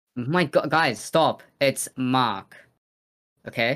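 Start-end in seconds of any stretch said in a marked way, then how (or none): 1.6-2.6 New Zealand accent, no r sound in Mark. Showing the others how to say a brother's name: kiwi accent. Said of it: "that's the Kiwi accent for you".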